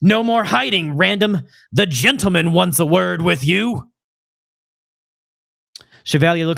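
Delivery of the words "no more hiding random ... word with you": gruff, rough voice moving from distant to near. Voicing a thug in a recording breaking in on someone hiding: rough voice. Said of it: "A rough voice".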